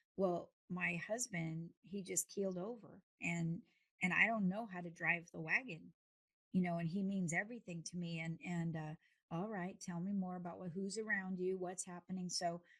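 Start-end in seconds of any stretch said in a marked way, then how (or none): none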